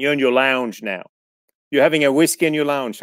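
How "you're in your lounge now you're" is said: plain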